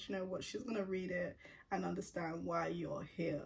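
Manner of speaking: ordinary talk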